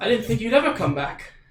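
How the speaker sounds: shy, flustered tone. A game master voices a character who recognizes Laneth; bashful, blushing. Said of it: "kind of blushes a little bit and he says".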